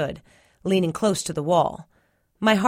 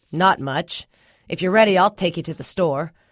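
ordinary delivery

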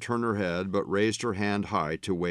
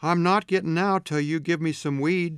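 slurred speech; 9 semitones higher, 3 dB louder than usual. Lily, in the back seat after being brought home, slurred. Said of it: "she slurred".

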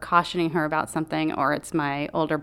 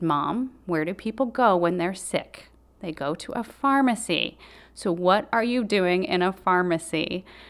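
mock severe, very stern scolding tone; 3 semitones higher than usual. Retelling how her brother scolded their mom: imitating a stern tone. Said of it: "has perfected a very stern tone".

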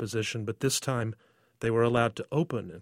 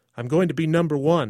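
confident, proud, boastful, raised voice; 4 semitones higher, 7 dB louder than usual. A young girl answers the narrator beside an older man, proud. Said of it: "she said proudly".

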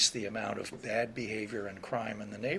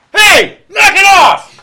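very loud, very high, shrill holler; 29 dB louder than usual. Speaker retells a cop startling two dealers around a corner: re-enacting a cop's big voice. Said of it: "says in a big voice".

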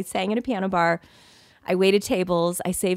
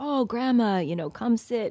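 put-on big, heavy, thick Greek accent; 4 semitones higher than usual. Retelling how Gregory welcomed the speaker's grandma: Gregory's thick Greek accent. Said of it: "big, thick Greek accent".

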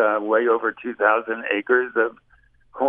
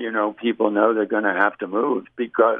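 plain

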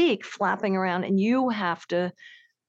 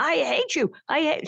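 put-on hawk screech, higher; 8 semitones higher than usual. Retelling how a hawk screamed at her for wearing a skirt: imitating a hawk screaming. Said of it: "she was screaming at me".

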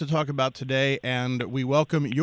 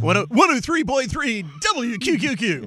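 radio announcer voice, much higher; 9 semitones higher, 4 dB louder than usual. Asked to say the station's call letters in radio voice; radio announcer voice. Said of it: "Can you say that in radio voice?".

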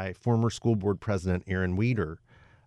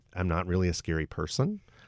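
usual speaking voice

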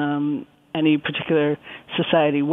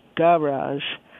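garage with stress on first syllable ga. Describing stress in French loanwords, garage with stress on first syllable 'ga'. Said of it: "with the accent on the first syllable".

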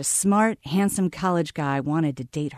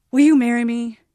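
blurted out, louder and higher; 7 semitones higher, 8 dB louder than usual. After pausing and taking a deep breath, a man finally speaks, blurted out. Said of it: "He blurted".

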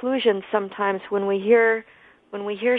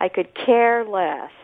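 the word care hit hard with stress. Showing how people say could care less: stress on care. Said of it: "They put the accent on care".

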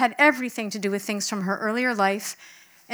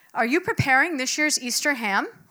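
put-on, pitched-up, carefully enunciated, pointed delivery; 5 semitones higher than usual. Speaker retells the woman in the wheelchair asking them a question, loud deliberate enunciation. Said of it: "with deliberate volume and enunciation".

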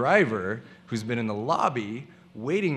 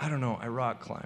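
put-on lethargic, listless voice, much quieter; 7 dB quieter than usual. Recalling being asked about free time for a commercial, retelling lethargic answers. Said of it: "I just give them really lethargic yes-no responses".

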